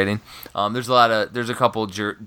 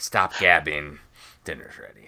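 put-on snotty, bratty, sassy teenage girl voice; 5 semitones lower than usual. Reading out the wife's text about dinner: imitating a snotty teenage girl. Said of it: "You're talking like a teenage girl".

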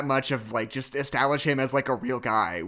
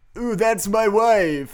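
in character, high, loud vampire count voice; 8 semitones higher, 6 dB louder than usual. Quoting a movie line while joking about it, doing the Dracula impression. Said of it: "I had to get in it".

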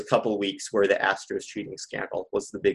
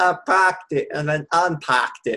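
terrible put-on Boston accent; 7 semitones higher, 5 dB louder than usual. Mid-conversation about childhood baseball heroes, in a bad fake Boston accent. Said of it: "Your Boston accent is one of your worst accents".

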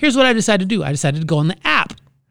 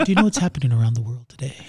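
smooth public radio announcer delivery; 5 semitones lower, 4 dB quieter than usual. Showing how people on NPR talk, in an NPR radio voice. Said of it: "they talk more like this".

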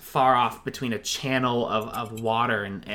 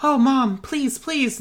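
put-on very high, loud child voice; 6 dB louder than usual. Voicing a market kid begging a parent for a toy: child begging parent. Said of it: "kids are like".

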